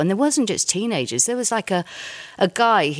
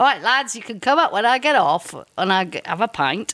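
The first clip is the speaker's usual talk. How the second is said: put-on northern English accent; 3 semitones higher than usual. Retelling a band story, quoting a musician in a northern english accent. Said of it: "That's a northern accent".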